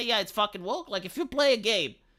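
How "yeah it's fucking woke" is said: plain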